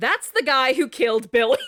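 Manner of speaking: screaming, yelled-out accusing tone. Retelling a story where Johnny accuses someone at a funeral: imitating someone screaming. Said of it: "And Johnny screams".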